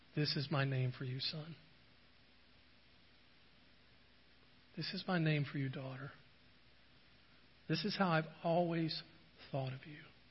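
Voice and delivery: whispering softly. Picturing Jesus speaking a secret pet name into one's ear: whispering. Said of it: "he whispers in my ear".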